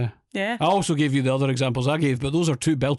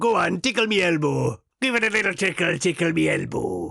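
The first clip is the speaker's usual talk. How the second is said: put-on pirate voice, higher pitch; 4 semitones higher than usual. Repeating the Tickle Me Elbow catchphrase, slipping into a pirate voice. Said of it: "I don't know why I turned into a pirate".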